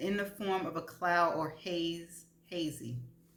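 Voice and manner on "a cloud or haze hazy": ordinary talk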